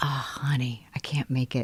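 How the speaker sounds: soft, fully voiceless whisper. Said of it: "he's, like, whispering in the on-call room".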